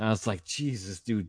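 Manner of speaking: ordinary delivery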